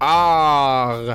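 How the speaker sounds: low-pitched 'ah'. Showing what you say when the dentist asks how you're doing, dentist-chair 'ah'. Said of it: "really good impression of me at the dentist".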